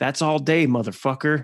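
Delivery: mock yelling. Retelling a basketball player yelling at an opponent after a shot, retelling a yell. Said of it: "he looks right at him and he's yelling".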